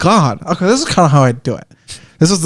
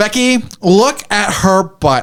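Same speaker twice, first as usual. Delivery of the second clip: old put-on character voice, high and slow; 5 semitones higher than usual. Trying out an old put-on character voice: Becky voice. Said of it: "I have to do it like this".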